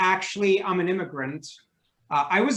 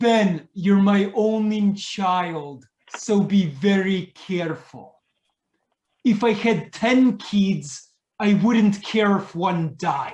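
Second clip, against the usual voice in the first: put-on thick Russian accent, very slow and drawn out. Imitating his mother's repeated advice to him growing up, heavy russian accent. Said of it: "with a heavy accent".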